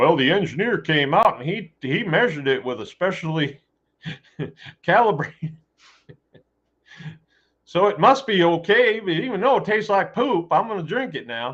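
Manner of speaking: put-on Southern accent. Speaker mocks somebody by slipping into a mock Southern accent. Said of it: "putting on my southern accent just to just to slam somebody".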